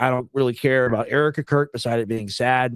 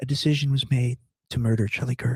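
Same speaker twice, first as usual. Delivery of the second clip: mock sultry, over-the-top seductive delivery; 3 dB quieter than usual. Imitating how she said a line in a played clip: imitating a seductive tone. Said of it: "the most, like, seductive way".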